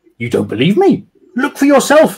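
very high, insistent tone. Sergeant Dawson answers Mr. Rye's disbelief: insistent. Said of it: "insisted Sergeant Dawson".

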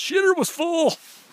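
loud high-pitched yell. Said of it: "just yells".

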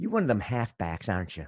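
terrible Southern accent, Southern belle voice.

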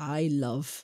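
sarcastic tone. Complaining to another speaker about unwanted messages: sarcastic. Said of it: "I'm being sarcastic here".

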